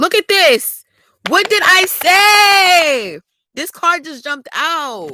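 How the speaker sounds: very high, full-voiced, drawn-out scream. Reacting into the mic as a card jumps out: screaming. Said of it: "I know the mic is right here and I'm screaming".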